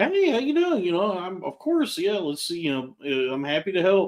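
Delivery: fake cheerful, friendly customer-service voice, sing-song. Retelling own way of answering sales calls: imitating own fake cheerful phone voice. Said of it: "when you hear me take these calls".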